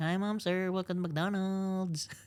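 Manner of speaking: put-on caricatured Filipino accent. Discussing racial undertones in how Filipinos are expected to sound, doing a stereotyped Filipino accent. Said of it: "what should a Filipino sound like?".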